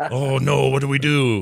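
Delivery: very slow, drawn-out, put-on Korean accent. Retelling what a brother said about the game switches: put-on korean accent. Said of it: "I just gave him an accent".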